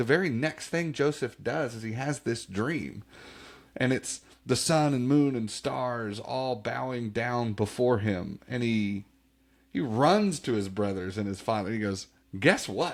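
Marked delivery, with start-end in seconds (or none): 12.4-13.0 put-on proud, boastful voice, higher. Retelling a dream boast to brothers and father: imitating Joseph's proud voice. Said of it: "pride in his voice".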